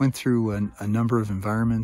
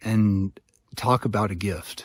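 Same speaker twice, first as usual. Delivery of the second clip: ordinary talk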